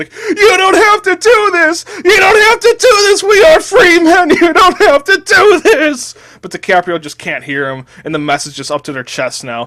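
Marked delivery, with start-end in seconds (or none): 0.1-6.1 shrill, full-volume, high, desperate pleading scream. Telling a story, voicing Jonah Hill screaming in someone's face: Jonah Hill screaming. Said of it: "He's way too afraid for that, and his breathing intensifies, and his heart begins to race and steadily increase, / He's way too afraid for that, / And [name] just runs up to DiCaprio and just starts s".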